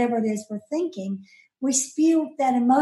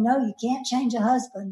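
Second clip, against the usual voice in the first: ordinary talk, nothing marked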